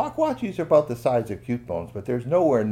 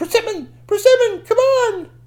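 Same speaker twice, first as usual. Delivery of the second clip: high, loud yelling. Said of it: "And then she yelled".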